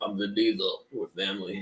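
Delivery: voice sounding caught inside a vacuum. Imitating how Vin Diesel talks, sounding like he's caught in a vacuum: imitating Vin Diesel's voice. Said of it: "he always kinda is like".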